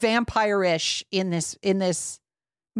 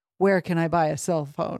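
put-on whispery voice, much lower; 4 semitones lower than usual. Retelling a scene, quoting a character entering the city: imitating a whispery voice. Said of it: "he says in his whispery voice".

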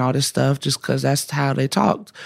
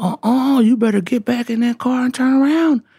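play-acted cranky old man, high, yelling and hollering; 10 semitones higher than usual. Retelling a stranger at the fishing spot ordering them away: imitating an old man yelling. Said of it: "starts yelling at me".

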